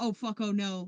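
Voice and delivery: mock terror, acted frightened voice. Imitating a reaction to seeing a human hit by a car: mock terror. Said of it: "like, terror".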